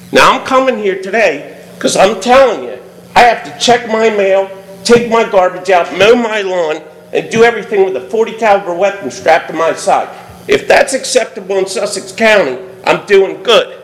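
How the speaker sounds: ordinary delivery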